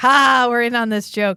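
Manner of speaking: put-on high, loud words laughed out together. Retelling how two people laughed at a joke: imitating laughing while talking. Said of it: "they both laugh like".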